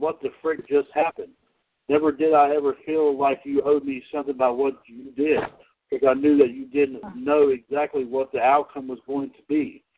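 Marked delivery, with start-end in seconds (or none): none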